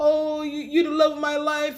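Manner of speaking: weepy, sobbing, high crying voice. Retelling a scene where a man pleads with a woman: imitating someone crying. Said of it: "He's all crying like".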